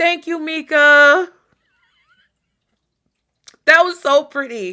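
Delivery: choked-up, tearful, holding back tears, drawn out. Thanking Mika, holding back tears. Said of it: "I'm trying not to cry".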